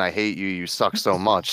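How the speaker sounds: normal talking voice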